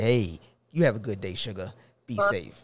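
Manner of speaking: put-on old man's easygoing old-timer voice. Retelling how he greets a woman, talking like an old man. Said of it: "I talk like an old".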